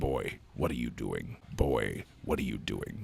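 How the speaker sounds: put-on gruff warrior voice. Imagining what a game warrior would say: Kratos voice. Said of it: "Kratos would just be a lot of".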